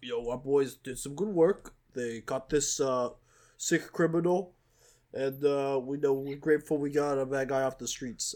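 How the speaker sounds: put-on New York City accent. Quoting the hip-hop crimes unit guy praising his detectives, in an NYC Guido voice. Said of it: "he looks like NYC Guido voice".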